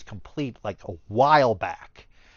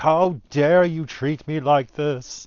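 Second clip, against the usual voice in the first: mock slow, drawn-out, restrained mild yell; 4 semitones higher than usual. Retelling angry messages from a buyer of Pokemon toys: imitating a buyer yelling. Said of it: "him just yelling at me".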